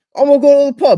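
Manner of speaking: imitated British accent. Imitating how British people talk: put-on British accent. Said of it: "British people in general, like, they're like".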